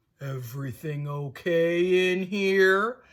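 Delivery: gruff low rumble. Narrating a dark figure in the doorway asking the group, in a deep gruff voice. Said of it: "asked a deep, gruff voice".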